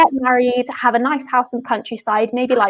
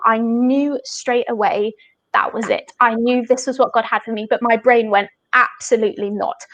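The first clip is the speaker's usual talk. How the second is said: ordinary delivery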